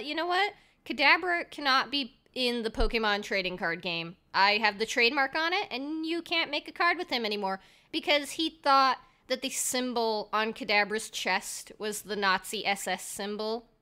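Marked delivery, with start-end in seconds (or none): none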